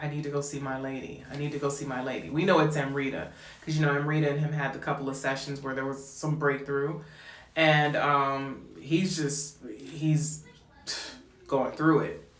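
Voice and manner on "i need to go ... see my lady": put-on angry, pissed-off, fed-up, insistent tone. Retelling a character's line after being provoked: imitating someone pissed off. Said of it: "'cause he's so pissed".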